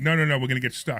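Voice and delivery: normal talking voice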